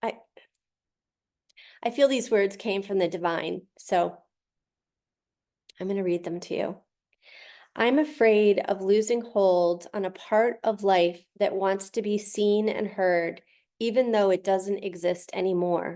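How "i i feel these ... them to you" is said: fast, emotional, choked-up voice. Speaker about to read words she feels came from the divine, choked up. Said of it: "I'm just really choked up today".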